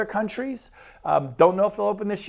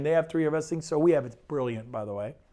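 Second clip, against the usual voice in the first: plain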